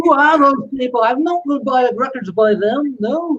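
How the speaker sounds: put-on English accent. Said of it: "that's a good accent".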